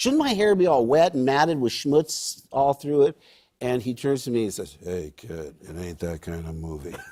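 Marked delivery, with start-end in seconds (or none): 4.8-7.0 very low, hushed movie-star voice. Retelling a movie star's reply to a question: Harrison Ford impression. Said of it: "the most spot-on impression of Harrison Ford".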